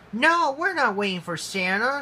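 sharp, snapping. [name] answers Mary Angel's guess, snapping. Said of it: "snapped [name]".

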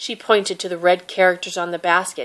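ordinary delivery

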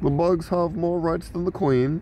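very high-pitched British police officer voice. Speaker tells co-host they're trying to talk like a british police officer: british police officer voice. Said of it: "I'm trying to talk like a British police officer".

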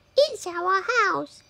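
tiny, very high, squeaking mother mouse voice. Reading a story aloud, voicing the mother mouse answering George, squeaky mother mouse voice. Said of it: "squeaked the mother mouse. ... squeaked the mother mouse. ... she squeaked".

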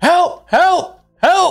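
shrieking, very high-pitched and very loud. Retelling how you reacted after someone retaliated, screaming for help. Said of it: "I just start screaming".

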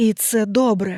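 faint, barely audible whisper. Leaning over the narrator, someone speaks in a barely audible whisper. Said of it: "ледь чутно прошепотів".

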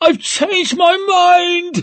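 very high, slobbering, desperate shriek. A captive, eyes fixed on the needle, tries to twist away: desperate screech. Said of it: "she screeched, slobbering, desperate".

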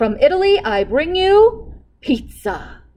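proud, loud, deliberate delivery. Narrator reading the cook presenting his dish to the king; proudly. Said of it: "the cook said proudly".

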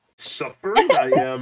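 loud little-sage voice. Guessing in a drawing game after others mention Yoda: Yoda voice.

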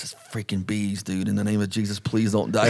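put-on panicked voice. Retelling own words during a bee swarm overhead: retelling own panicked words. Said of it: "I'm freaking out".

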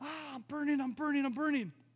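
high-pitched, anguished, pained cry. Retelling what she cried out after he put oil in her mouth, imitating her screaming. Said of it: "She starts screaming like".

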